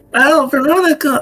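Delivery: very high, shrill, calling-out shout. Playing a character who spots someone and calls to her: yelling in character. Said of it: "but in character".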